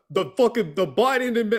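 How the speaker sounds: clumsy failed Jersey accent. Mid-sentence, trying out a bad new jersey accent. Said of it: "I can't do a Jersey accent".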